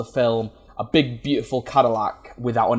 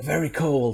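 hushed, soft, leaning-in stage half-whisper; 5 dB quieter than usual. Retelling leaning over to a girlfriend during snow scenes: retelling a half-whisper. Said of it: "lean over and whisper".

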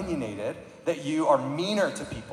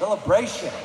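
celebration with heavy, punched stress on -bration; 5 semitones higher than usual. Teaching how to say celebration: strong stress on bration. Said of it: "say it like that with the emphasis on the bration part".

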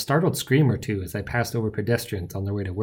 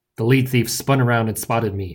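ordinary delivery

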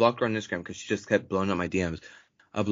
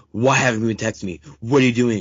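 loud, winded, out-of-breath huffing; 7 dB louder than usual. Retelling what she said after sprinting from a car: imitating her huffing. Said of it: "She's huff".

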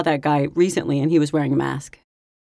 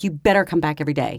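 ordinary talk

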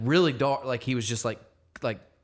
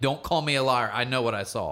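put-on adamant, insistent child voice. Retelling how a young daughter insisted on what she saw: imitating an adamant child.

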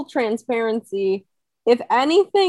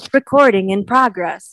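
robotic, automated system announcer voice; 2 semitones lower, 4 dB louder than usual. A host explaining a Zoom update to listeners, doing the Zoom recording announcement voice. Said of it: "That was a perfect impression".

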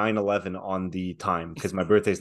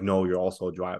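plain

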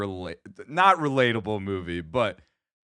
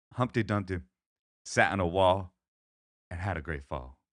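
put-on Texan accent, lower and quieter; 4 semitones lower, 4 dB quieter than usual. Reading a nursery rhyme on request: George Bush impression. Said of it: "can you give me a little George Bush Humpty Dumpty reading".

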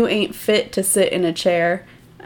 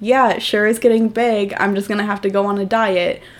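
light, joking tone of voice; 2 semitones higher than usual. Retelling a 16-year-old girl's reply to a mean remark, retelling a joking reply. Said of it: "and jokingly".

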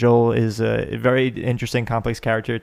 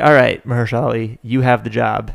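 ordinary delivery

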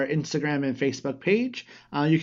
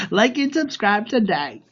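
put-on loud New York accent, put on for show; 6 semitones higher, 5 dB louder than usual. Filling in someone else's part of the show's outro, in a New York accent. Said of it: "New York accent".

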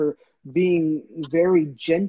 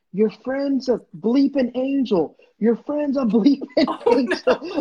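mock woman's high-pitched holler, as if from afar; 8 semitones higher, 3 dB louder than usual. Retelling how a woman yells at people from afar, retelling a woman's yell. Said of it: "she starts yelling at them".

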